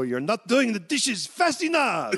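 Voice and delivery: loud, high, rising shout in put-on French accent. Retelling how he sneaked up on you at your dishwasher job, imitate a loud-ass french guy. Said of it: "say in that loud-ass voice of his".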